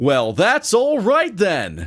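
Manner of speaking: high-pitched, drawn-out, swooping and sarcastic. Retelling a character's reply to each excuse: imitating Neil Patrick Harris, sarcastic. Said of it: "saying that part so clearly and sarcastically".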